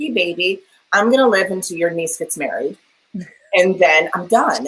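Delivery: normal talking voice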